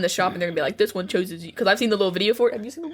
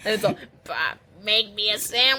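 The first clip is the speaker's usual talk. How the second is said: put-on old woman voice with New York accent. Voicing a biscuit in a wig and lipstick: old new york woman voice. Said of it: "you become an old New York woman real easy".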